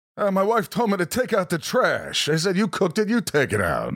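high, swooping comedic delivery. Answering a request to do a Rodney Dangerfield impression: Rodney Dangerfield voice. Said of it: "Do Rodney".

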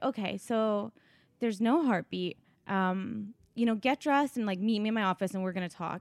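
ordinary talk, nothing marked

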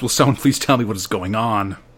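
ordinary talk, nothing marked

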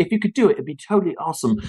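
befuddled, very polite tone. Showing how to ask hotel staff for something: befuddled Hugh Grant manner. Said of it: "the befuddled Hugh Grant kind of look".

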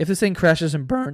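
cracking voice breaking up mid-word, word cut off. Talking about wanting to put out a show anyway: voice cracking. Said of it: "my voice is cracking".

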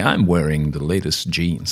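put-on American accent in commercial-style delivery. Mimicking how popular podcasters plug sponsors, American accent. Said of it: "I don't know why I went into an American accent then".

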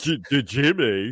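very slow, high, halting, stuttering cartoon voice. Showing how the South Park character talks: Timmy from South Park voice. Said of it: "Timmy is like that".

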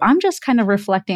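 ordinary talk

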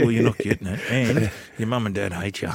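imitated whisper. Retelling what a player dressed as santa whispered in a kid's ear: imitating a whisper. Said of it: "whisper in his ear".

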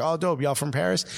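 ordinary talk, nothing marked

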